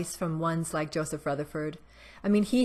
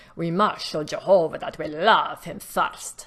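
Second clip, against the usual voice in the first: fake Russian accent, slow, loud, drawn out; 5 dB louder than usual. Quoting a line from a Jehovah's Witness video, put-on Russian accent. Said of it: "So that's my best Russian accent".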